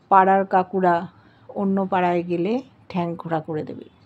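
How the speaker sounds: usual speaking voice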